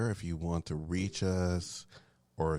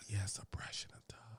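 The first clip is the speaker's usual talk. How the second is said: hushed whisper, much quieter and slower; 2 semitones higher, 11 dB quieter than usual. On a show, answering a co-host, whispering. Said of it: "Why are we whispering again?".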